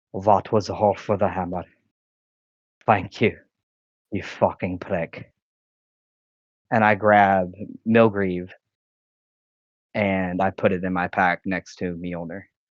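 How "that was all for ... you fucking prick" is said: theatrical whisper. Speaking as a character who half-whispers so the squirrel cannot hear, half-whispering. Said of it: "I'm going to whisper".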